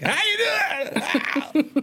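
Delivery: very high, strained, lost-sounding voice, squeezed out. Retelling greeting a meeting after losing the voice: Bobcat Goldthwait voice. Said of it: "I sound like Bobcat Goldthwait".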